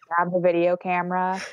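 ordinary talk

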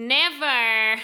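over-the-top, drawn-out, exaggerated Texan American twang. Modeling the word never for listeners in an exaggerated Texan American accent. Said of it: "in uw lelijkste of in uw overdrevenste Amerikaans accent. Van Texas".

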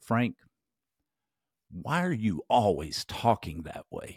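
aggressive, confronting, challenging, pointed tone. Retelling an investment manager's question to the speaker, in a mock-aggressive tone. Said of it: "said in an aggressive tone of voice".

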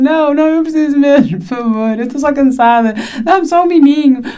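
begging through tears, crying and pleading. Recounting how she asks people for help, imitating her own crying plea. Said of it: "eu já estou a chorar".

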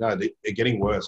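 plain

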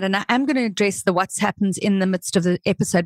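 ordinary talk

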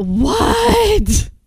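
mock over-the-top dramatic "what", pitched very high. Retelling answering a knock on the door while showering: overly dramatic. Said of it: "overly dramatic about it".

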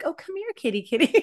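very high, sugary, sweet coaxing call. Acting out fawning at a saber-tooth tiger: mock fawning. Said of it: "with fawning, are you kind of like".

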